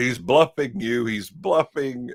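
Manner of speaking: acted, half-voiced, slow, insistent calling out. Retelling a film scene where a character yells a warning: imitating someone yelling. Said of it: "he's yelling".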